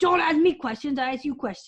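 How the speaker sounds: cross, mad, bossy monster voice talking down. A player guesses what the Trolloc Narg means, acting mad as Narg. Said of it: "like he's like mad".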